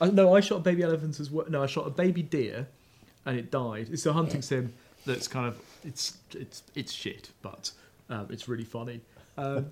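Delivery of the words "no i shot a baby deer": ordinary delivery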